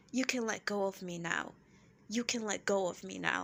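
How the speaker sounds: chillingly polite, frosty, ice-cold put-down. Retelling Erica telling Garcelle to let go: imitating Erica, ice-cold and polite. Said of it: "Erica's ice cold".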